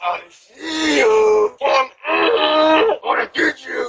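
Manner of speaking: put-on, fake deep, menacing, straining, scary voice. Quoting the clowns captured on a Ring camera, in a mock fake-deep scary voice. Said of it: "attempting to make their voice deep".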